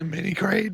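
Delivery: blown-out voice giving way on the words. Answering a question about where to get supers, blown-out voice. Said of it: "What happened to my voice?".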